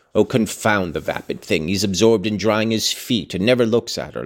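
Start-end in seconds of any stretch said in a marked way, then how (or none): none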